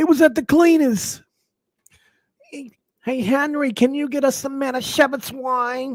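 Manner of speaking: very high, exaggerated put-on New York accent. Riffing at random, the speaker slips into a new york accent impression. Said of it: "That's my New York accent".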